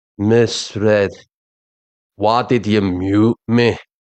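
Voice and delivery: droning, flat monotone, very slow. Imitating the man with the bag on his head addressing Miss Red, in his monotone. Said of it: "But it's the monotone".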